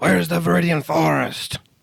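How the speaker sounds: high, rough, drawn-out yell in character voice. Asking where the forest is while playing Solid: yelling in character. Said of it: "as Solid yells".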